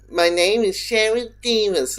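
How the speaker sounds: squeaky, piping, high-pitched little voice. Describing an actor's performance on a show, quoting her squeaky Sharon Davis voice. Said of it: "her doing the squeaky voice of".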